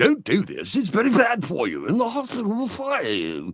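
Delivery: put-on rapid Australian accent, no breath. Imitating a narrator who reads without breathing: imitating a fast australian accent, no breath. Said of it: "without taking a breath with an Australian accent".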